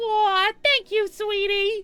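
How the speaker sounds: very cute voice. Narrator voices her reply after being told to stick with it, very cute voice. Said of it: "speaks with a very cute voice".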